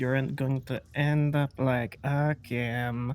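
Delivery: voice dropped low. In a role-play, a character says one remark in a lowered voice. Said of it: "I say as I lower my voice for that part only".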